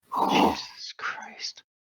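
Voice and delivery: low, unvoiced, breathed-out whisper.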